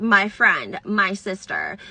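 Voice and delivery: put-on slow, swooping sarcastic tone. Reading aloud a quoted text message: imitating a sarcastic tone.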